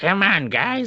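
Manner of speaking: grating, high-pitched nagging voice. Retelling a scene where she gets mad at them: imitating Carrie Fisher's grating voice. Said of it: "her voice is so grating".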